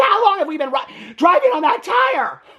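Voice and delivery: shrill, very high, angry screaming. Retelling an on-camera row over a shredded tire, imitating someone screaming and yelling. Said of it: "she's like screaming and yelling at".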